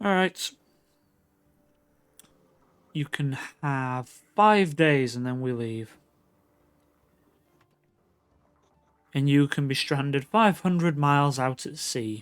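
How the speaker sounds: grudging, reluctant tone. Voicing the captain setting five days before leaving: reluctant captain. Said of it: "Captain sort of reluctantly".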